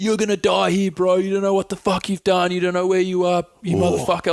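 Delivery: high-pitched, abusive screaming. Retelling what the men at the window screamed: imitating someone screaming. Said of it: "screaming at me".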